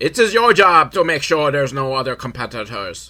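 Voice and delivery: loud, botched attempt at an Irish accent. Retelling a story, the speaker quotes an old Irish guy in a bad Irish accent. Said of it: "tried not to do an Irish accent".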